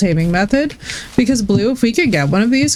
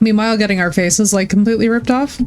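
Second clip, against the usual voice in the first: usual speaking voice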